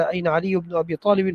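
ordinary talk

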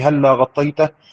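ordinary talk

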